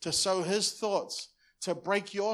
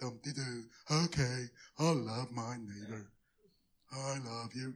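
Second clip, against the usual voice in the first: put-on depressed voice, much lower; 8 semitones lower, 7 dB quieter than usual. Speaker demonstrates keeping a commandment only out of duty: Barney depressed voice. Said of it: "you come with that Barney depressed voice".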